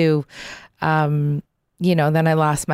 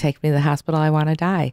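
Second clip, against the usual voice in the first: whispering, faster. A speaker retells what a dying man whispered in his ear; retelling a whisper. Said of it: "he whispered in my ear".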